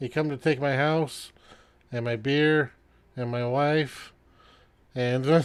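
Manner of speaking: put-on boozy, muddled, rambling drunken rant. A drunk man on his porch confronts the approaching strangers, drunk. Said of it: "And you see this guy has drunken like 6 of these bottles on his porch. / And you see this guy has drunken like 6 of these bottles on his porch. / burps, and a bubble comes out".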